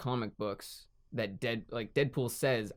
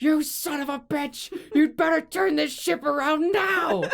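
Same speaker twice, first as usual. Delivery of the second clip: put-on very high, loud, drunken screaming; 10 dB louder than usual. Retelling a show where a drunk father screams at Moby Dick's captain, imitating a drunk screaming. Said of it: "he's screaming at the captain".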